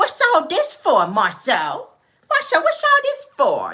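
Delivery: very high voice, swooping with surprise. Acting out a woman who tries to act so surprised, in her Celie voice. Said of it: "That's how she sound in her Celie voice".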